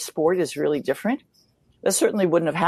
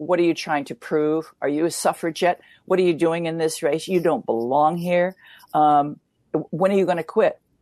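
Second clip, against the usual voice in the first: mock scolding, berating tone. Retelling how the press berated the speaker: imitating berating press. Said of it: "really berating me".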